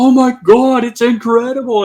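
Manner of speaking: put-on British accent, pitched very high. Retelling a man seeing orbs for the first time, in Adam Davies' British accent. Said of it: "in his British accent".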